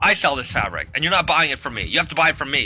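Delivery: normal talking voice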